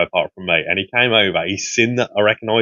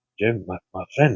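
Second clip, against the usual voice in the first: furtive, conspiratorial, shady, secretive man's voice; 4 dB quieter than usual. Retelling how a man came up to him: imitating someone shady and secretive. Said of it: "all shady and secretive".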